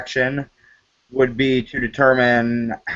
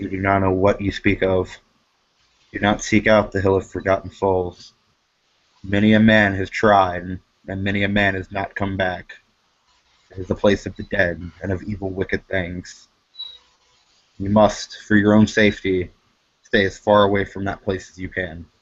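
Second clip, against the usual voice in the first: very quiet, low, hushed, deadly serious voice; 5 semitones lower than usual. Game narrator voicing a man asked about the Hill of Forgotten Souls, very quiet and very serious. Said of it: "he gets very very quiet and very very very serious".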